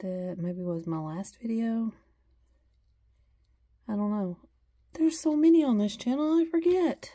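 heavy, obviously insincere sarcasm, swooping sing-song delivery. Talking to her channel's viewers, the speaker makes a remark, sarcastic. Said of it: "that's sarcasm in case you couldn't tell".

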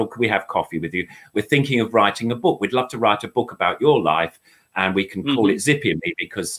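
ordinary delivery

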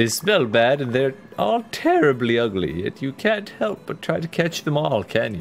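condescending, nose-in-the-air, snooty haughty tone. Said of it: "She is very snooty".

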